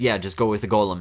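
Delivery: ordinary delivery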